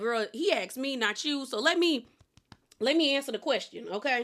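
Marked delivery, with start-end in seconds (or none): none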